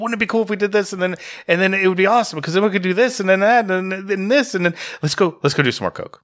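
put-on fast, rambling talk, a mile a minute. Describing how such people go on and on, imitating fast rambling talk. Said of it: "Talking a mile a minute".

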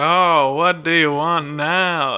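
exasperated genie voice, very slow and drawn out. Retelling a scene where the genie is woken up again: imitating a fed-up genie. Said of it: "fed up".

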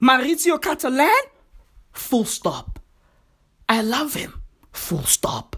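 choppy, halting, blunt delivery broken into pieces. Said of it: "He speaks in jazz".

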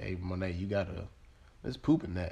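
normal talking voice

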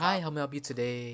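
very gentle, soft, kindly voice. Imitating a befriender answering a helpline call: imitating a gentle helpline volunteer. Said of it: "very gentle".

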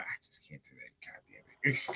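muttered under breath. Speaker acts out what they would say about visiting fans in jerseys: muttered under breath. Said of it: "say under my breath".

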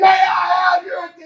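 mock shouted call, loud cry. Preaching, acting out god screaming for attention: acting out god screaming. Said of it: "He's screaming".

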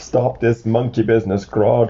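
plain

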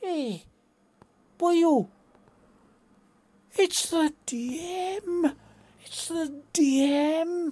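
booming, drawn-out, very loud, high Welsh shout. Retelling a former player calling out in the street: imitating Wayne's Welsh voice. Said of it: "Wayne was a Welshman. suddenly I hear this voice go".

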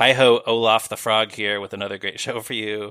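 ordinary delivery

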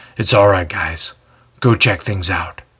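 low, gruff voice. Reading a story aloud, the jailer tells his men: gruff voice. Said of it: "says in his familiar gruff voice".

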